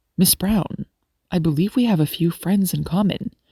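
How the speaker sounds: ordinary delivery, nothing marked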